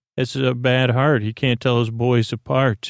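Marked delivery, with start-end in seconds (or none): none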